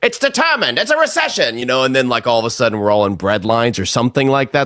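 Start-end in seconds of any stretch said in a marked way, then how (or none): 0.0-1.6 put-on very high 1930s old-time radio announcer voice. Imagining a man stepping out of a stone building: 1930s radio announcer voice. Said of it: "in like a nineteen thirties radio voice".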